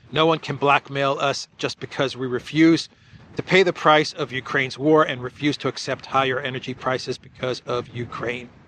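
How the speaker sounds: normal talking voice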